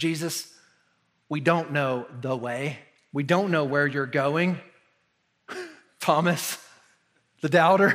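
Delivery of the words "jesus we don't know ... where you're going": put-on sarcastic, dry, deadpan delivery. Telling how a disciple answered Jesus, retelling a sarcastic, dry reply. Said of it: "most sarcastic, dry friends looks at him and goes".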